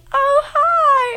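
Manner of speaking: very high, giddy, caught-off-guard head voice. Recalling calling in, the speaker re-enacts her greeting in a giddy high head voice. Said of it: "I get really high in my head voice".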